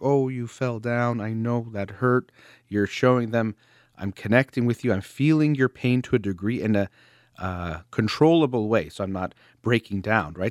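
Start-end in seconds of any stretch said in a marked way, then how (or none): 0.0-2.3 slightly sad, sympathetic, comforting voice. Showing how a parent responds when a child comes crying, slightly sad voice. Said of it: "make their voice a little bit sad".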